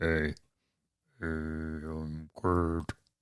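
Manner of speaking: very deep voice. Demonstrating how to introduce yourself in a seductive tone, in the lowest voice. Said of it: "The lowest voice".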